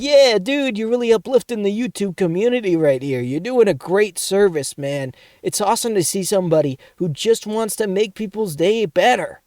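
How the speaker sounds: high, insincere, sarcastic tone. Speaker retelling a sarcastic reply to a comment, retelling sarcastic mock praise. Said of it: "It was like like sarcastic".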